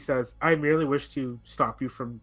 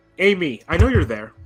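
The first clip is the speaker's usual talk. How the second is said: raised, lifted voice, projected loudly; 3 semitones higher, 7 dB louder than usual. Voicing a man calling out to someone he knows is there, raised voice. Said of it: "kind of raises his voice".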